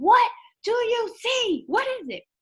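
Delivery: very high, loud screaming, stretched out. Telling a story about a man splashing back into the tub, retelling a scream. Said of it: "I'm screaming".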